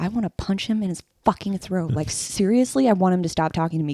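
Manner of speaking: put-on whisper. Retelling what was said to Ben about an annoying employee: retelling a whisper. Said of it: "I'd whisper to Ben".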